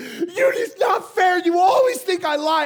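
shrill, very high, very loud tearful screaming. Retelling how she reacted after he caught her, imitating her crying and screaming. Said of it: "And she's just screaming".

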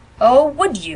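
nasty, cutting, rather vicious tone. [name] answers Phil, rather viciously. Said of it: "rather viciously".

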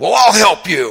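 high, loud yell. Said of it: "as he's yelling at me".

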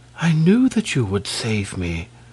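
barely audible, quiet half-whisper. She speaks to the prince so no one else hears, half-whispering. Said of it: "she whispered".

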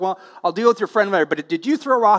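ordinary delivery

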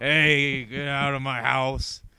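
put-on hungover-sounding voice. Mocking a movie scene where someone is woken hungover: hungover Aquaman voice. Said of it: "roused him up from, like, a bad hangover".

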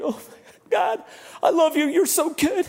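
put-on bawling, weepy, high, slow tearful outpouring. Retelling own reaction to a gift from the graduates, reenacting weeping and bawling. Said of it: "weeping, bawling".

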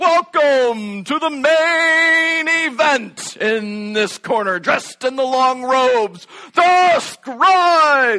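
booming boxing announcer voice. Retelling how Jake burst into announcer mode in a meeting, imitating Jake's boxing announcer. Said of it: "busts out boxer announcing mode".

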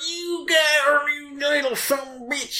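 put-on southern good old boy drawl. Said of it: "talking like a good old boy".

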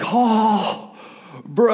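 surfer dude voice. Recalling seeing dolphins in the waves, voicing a surfer in the water: stereotypical surfer dude voice. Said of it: "the stereotypical surfer dude".

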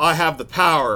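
ordinary talk

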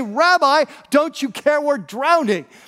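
put-on irritated, panicked voice. Retelling how panicking men woke their sleeping leader, acting out the irritation. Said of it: "you can hear the irritation in their voice".

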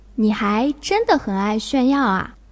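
plain

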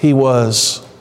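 low, sighing, longing voice.

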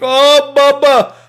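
very high, loud, shrill screeching scream. Recalling an impersonator's take on a wrestler: screaming Iron Sheik impression. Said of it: "he just screams stuff".

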